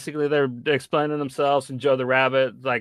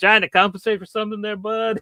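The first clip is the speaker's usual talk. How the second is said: high-pitched, sneering, mocking, teasing tone; 8 semitones higher, 3 dB louder than usual. Retelling a character making fun of another's big gun: imitating a mocking taunt. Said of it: "making fun of Giovanni".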